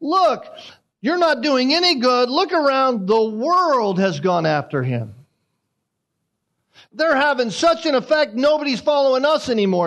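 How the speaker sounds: biting, sarcastic, sing-song, swooping tone. Retelling what the Pharisees said about Jesus's followers: imitating sarcastic Pharisees. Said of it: "the Pharisees sarcastically say".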